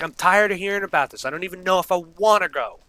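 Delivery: exasperated, fed-up, high-pitched freak-out. Retelling snapping at a friend about prom plans: imitating own past freak-out. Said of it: "I just freaked out".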